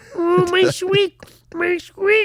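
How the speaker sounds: very high, full diva pig-puppet voice. Talking about Halloween costumes, the speaker tries a Miss Piggy voice. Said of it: "And I can do Miss Piggy".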